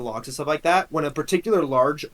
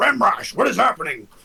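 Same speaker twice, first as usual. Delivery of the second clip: rasping, alarmed, rough, pitched-up orc voice; 7 semitones higher, 4 dB louder than usual. Voicing an orc during a game scene: orc voice. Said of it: "you hear one orc go".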